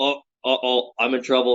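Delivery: slow, sarcastic, mock feigned worry. Retelling a guy in videos mocking workout recordings: imitating a sarcastic guy. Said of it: "just sarcastically".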